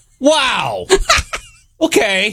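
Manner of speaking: furious, angry delivery. Asked by the host to do it angry, the voice actor performs it angry. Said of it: "can you do it angry".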